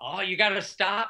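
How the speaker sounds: mock panicked, frantic, urgent voice. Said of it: "in frantic".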